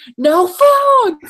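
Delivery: mock, very high, loud screamed voice. Retelling what a lady at a ride screamed at them: imitating a scream. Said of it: "screamed at us".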